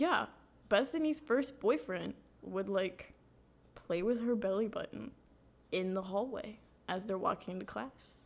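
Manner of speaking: ordinary talk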